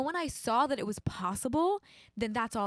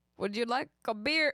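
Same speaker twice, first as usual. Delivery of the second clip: bad, failed put-on Irish accent attempt. Trying an irish accent they admit they cannot do, bad irish accent. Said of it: "I can't do it".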